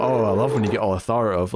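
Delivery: plain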